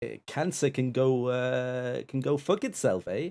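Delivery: Canadian-accented delivery. Fulfilling a viewer's donation request on stream, saying it in a canadian accent. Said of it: "within a Canadian accent".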